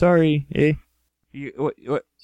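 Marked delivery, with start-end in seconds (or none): 0.0-0.7 mock Canadian accent, higher and louder. Coaching another speaker to sound Canadian: put-on Canadian accent. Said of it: "just say you're sorry a bunch of times".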